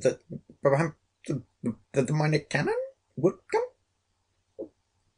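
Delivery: barely understandable, shaky voice. A labourer answers the griffin's demand for someone brave, voice shaking. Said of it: "his voice shaking so that his words could hardly be understood".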